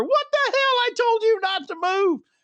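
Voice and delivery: high-pitched, very high, shrieking, screaming scold. Retelling a scream at the driver after slamming the door: retelling a scream. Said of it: "I'm screaming to her".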